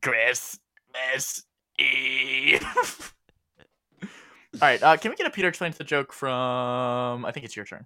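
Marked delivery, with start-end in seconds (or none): 0.0-3.1 put-on elderly woman's voice. Telling someone they sound like an old lady at the grocery store, the speaker does an old lady voice. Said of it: "And she'd go".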